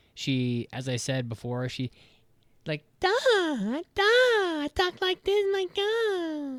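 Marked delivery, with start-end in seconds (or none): 3.0-6.6 very high, slow, ditzy airhead anime voice. Mocking how a dubbed anime character talks: imitating a ditzy anime character. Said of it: "that's how she talks".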